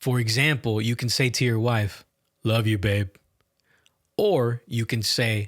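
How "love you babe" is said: level, bland, flat, emotionless monotone. Showing how delivery changes meaning, bland flat monotone. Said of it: "The first one is bland, monotone with almost no emotion".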